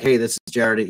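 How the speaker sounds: play-acted businesslike, stern and to the point. Replaying his own earlier self-introduction: replaying a stern, direct tone. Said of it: "I was a little sterner ... I was really direct and to the point".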